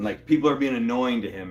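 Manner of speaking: ordinary talk, nothing marked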